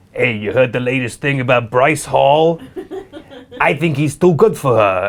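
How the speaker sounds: low, laughing paparazzi dude impression.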